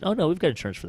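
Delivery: high, offhand, nonchalant tone. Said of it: "nonchalantly said".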